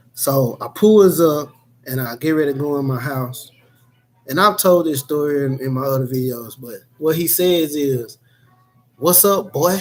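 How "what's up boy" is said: play-acted, insulting, hostile tone, pitched up. Retelling what a man outside the house said: imitating a hostile voice. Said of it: "With a real hostile type voice".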